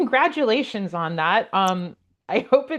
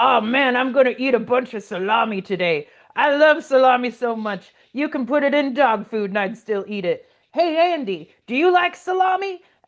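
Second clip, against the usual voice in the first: put-on voice of an older person; 2 semitones higher than usual. Retelling what the boomer tech guy said at the office copier; imitating a boomer tech guy. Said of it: "the boomer tech guy comes by and he's like".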